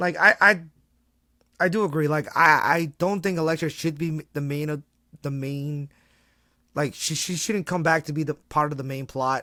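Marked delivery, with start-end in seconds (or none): 0.0-2.6 getting excited, letting it out louder, hyped-up. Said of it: "I'm getting a little excited here".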